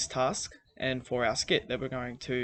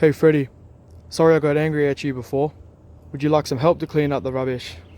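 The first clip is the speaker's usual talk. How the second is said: loud, friendly owl voice. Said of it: "So in comes Harry".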